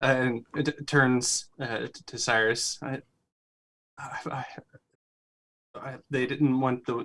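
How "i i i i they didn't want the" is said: stammering in character, quieter. Voicing a character who is shocked, stuttering in character. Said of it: "stuttering to himself".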